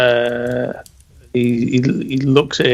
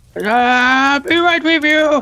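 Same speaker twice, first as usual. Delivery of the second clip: put-on very high old man's voice, drawn-out ah; 13 semitones higher than usual. Narrating a game scene, the speaker voices a faraway caller, very old man's voice. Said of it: "a very old Jet's voice".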